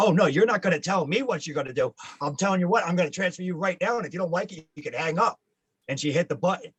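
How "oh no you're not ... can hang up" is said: snippy, sharp yell, pitched up. Retelling a phone call where a staffer refused a request: imitating a staffer yelling. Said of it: "she yelled at me".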